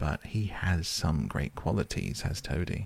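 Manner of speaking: ordinary delivery, nothing marked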